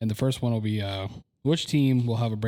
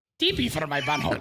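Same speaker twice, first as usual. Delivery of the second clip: goofy, dopey cartoon teenager voice, pitched up; 5 semitones higher than usual. Teased for repeating a word, the speaker breaks into a Beavis voice. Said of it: "you did the perfect Beavis voice".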